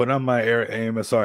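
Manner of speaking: plain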